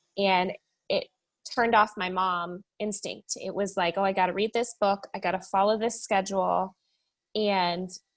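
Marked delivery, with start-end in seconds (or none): none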